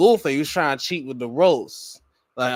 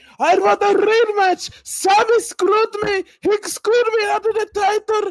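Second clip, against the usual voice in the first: angry ranting outburst, pitched way up; 3 dB louder than usual. Retelling a wrestling segment, imitating Gunther demanding a rematch: angry Gunther impression. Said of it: "He's angry as fuck".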